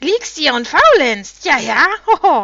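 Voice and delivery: very loud, shrieking, jeering, mocking cackle with laughter. Narrating the Drude landing beside Ronja and taunting her, shrieking with mocking laughter. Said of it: "Kreischend und hohnlachend".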